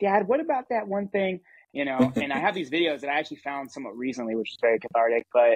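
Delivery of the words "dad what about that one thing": squeaky, super high-pitched little voice. Recalling asking dad questions from behind the camera, in a super high-pitched voice. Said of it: "like super high pitched voice behind the camera".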